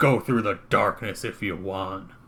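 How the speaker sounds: snarled, growling, dismissive tone. He ends the exchange and walks away from the others, snarling. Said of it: "he just snarls and he walks away".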